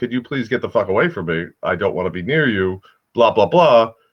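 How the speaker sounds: ordinary delivery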